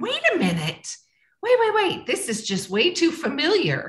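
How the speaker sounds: high, surprised double-take.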